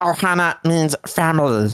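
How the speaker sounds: put-on alien cartoon voice. Speaker tests whether they can still do it, Stitch voice. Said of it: "can I still do my Stitch voice?".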